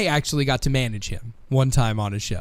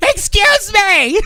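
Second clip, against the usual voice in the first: put-on shrill, very high, very loud, slurred drunken yell; 10 dB louder than usual. Retelling a drunk night after the Hall of Fame: imitating drunk Vickie Guerrero yelling. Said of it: "Just drunk Vicky Guerrero".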